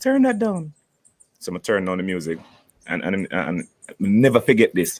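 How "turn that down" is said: little soft voice, pitched very high. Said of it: "him talking a little soft voice".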